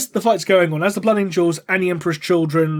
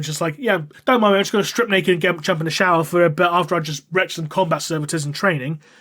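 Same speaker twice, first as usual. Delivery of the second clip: ordinary talk, nothing marked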